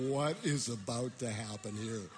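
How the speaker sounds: plain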